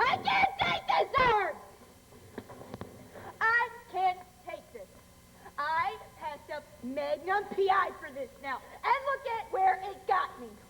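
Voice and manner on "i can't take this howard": high, loud, slow hysterical shout. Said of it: "Calm down".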